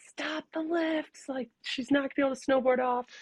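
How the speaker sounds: screaming, high-pitched. Retelling how the fiance screamed at the lifties: imitating someone screaming. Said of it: "he's screaming at the lifties".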